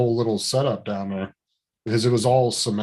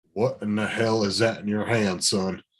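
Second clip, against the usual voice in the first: put-on stern, old-school army officer, old general voice. Retelling how an older military man questioned him: imitating a stern old general. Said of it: "he just had that old, stern".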